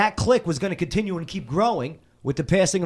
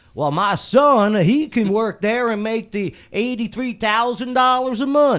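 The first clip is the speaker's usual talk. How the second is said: higher, folksy, put-on good old boy voice; 5 semitones higher, 4 dB louder than usual. Talking about a good old boy system, doing a good old boy impression of a father. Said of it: "that was my good old boy impression".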